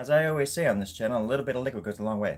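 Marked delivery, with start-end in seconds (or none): 1.2-2.4 quick, rushed straight through, rattled off. Repeating a favorite channel saying about liquid in your diet, said fast. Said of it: "I like saying it fast like that".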